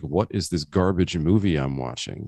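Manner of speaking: usual speaking voice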